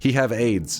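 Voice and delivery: put-on strong Chilean Spanish accent. Retelling what a friend from Chile said about his sick cat: strong Chilean accent. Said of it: "he had a strong accent".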